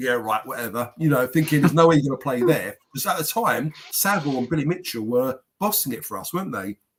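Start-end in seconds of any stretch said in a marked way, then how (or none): 0.0-0.9 put-on muttering under the breath. Retelling a reaction to a player's answer: imitating muttering under breath. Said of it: "under my breath".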